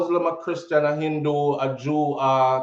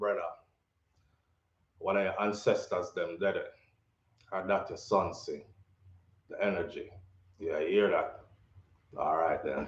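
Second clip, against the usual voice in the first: put-on deep, sexy man's voice; 8 semitones lower, 10 dB quieter than usual. Imitating how the man just talked to a listener: imitating the man's deep voice. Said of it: "Let me try to talk like him".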